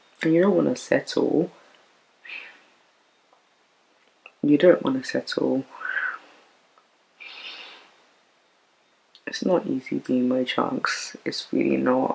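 crying while talking. Talking about feeling lonely and not wanting to settle, crying while talking. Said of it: "I need to stop crying".

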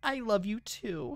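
mock lovey-dovey voice.

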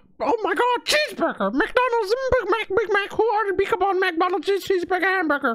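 squeaky cartoon voice, way up high. Asked to do Goofy, the speaker blurts out a Mickey Mouse voice. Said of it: "I know that was Mickey Mouse".

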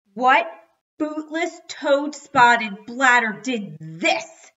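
very loud howled outcry. The narrator's dad finds his toy ruined, howling. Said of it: "My dad howled".

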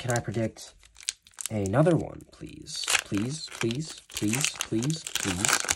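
slow, drawn-out pleading, begging over and over. Hoping to predict another one correctly, the speaker begs: begging. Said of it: "I'm begging".

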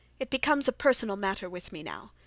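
ordinary delivery, nothing marked

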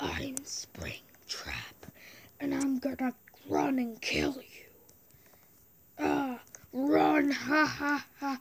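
put-on animatronic villain voice. Playing as Springtrap in a game, doing a Springtrap voice. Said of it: "try and do a Springtrap voice impression".

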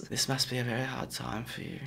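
hushed, very soft-spoken ASMR murmur. Describing a coffin guy who freaks them out, in a weird soft-spoken ASMR voice. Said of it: "Weird, soft-spoken ASMR voice".

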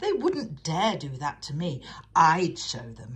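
loud, cocky, swaggering and boastful tone. An engine brags after hearing of another engine's accident: boastful. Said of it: "he boasted".

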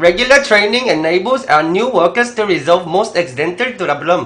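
woman's Vietnamese accent in English. Repeating the English sentence on request in a Vietnamese woman's accent. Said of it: "베트남 한 20년 정도 된 베트남 여자".

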